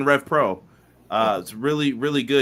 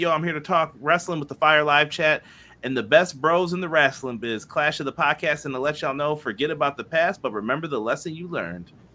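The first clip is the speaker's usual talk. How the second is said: usual speaking voice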